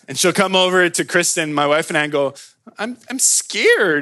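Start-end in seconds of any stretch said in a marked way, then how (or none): 2.7-4.0 put-on tiny, cute two-year-old voice, pitched up. Parent retells daughter coming over from the slide: cute little two-year-old voice. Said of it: "in her cute little two-year-old voice".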